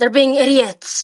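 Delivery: whispered aside, in character. Leaning toward an ally in the tunnel, speaking in character: whispering in character. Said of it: "whisper to him with one hand on my mouth".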